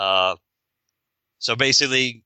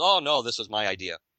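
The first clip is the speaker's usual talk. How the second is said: plain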